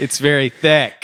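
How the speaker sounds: muffled shouting, as through a thick bag. Testing how a voice sounds through a thick paper bag, muffled shouting through it. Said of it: "I'm shouting through the paper bag".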